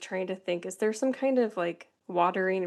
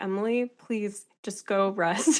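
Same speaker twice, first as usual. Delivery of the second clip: mock begging tone. Retelling how people watching asked her to rest: imitating someone begging. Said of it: "begging me".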